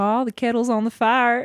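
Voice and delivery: attempted Southern US accent. Asked whether they can do a good southern accent, trying a line; attempted southern accent. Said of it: "Can you do a good Southern accent?".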